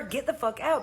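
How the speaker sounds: plain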